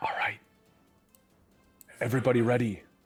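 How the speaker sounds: loud whisper. Voicing Marcus checking the party is ready: slightly louder whisper in character. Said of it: "Marcus will whisper a little louder".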